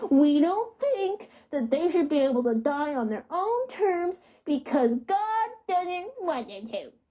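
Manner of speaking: put-on silly high baby voice. A speaker mocks how certain people sound, in a ridiculous baby Eric Cartman voice. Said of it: "talk in a ridiculous, like, baby".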